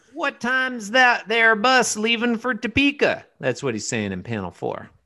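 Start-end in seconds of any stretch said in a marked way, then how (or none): 0.2-3.3 put-on country bumpkin voice, very high and loud. Reading a comic panel's line for a character pretending to be a country bumpkin. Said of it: "pretending to be a country bumpkin".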